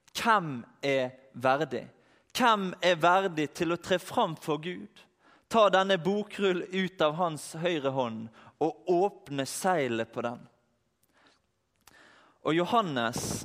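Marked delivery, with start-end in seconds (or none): none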